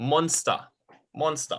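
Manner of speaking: German-style pronunciation. Showing a learner how to say monster in German: German-style pronunciation. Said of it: "you say it in, um, in a German style".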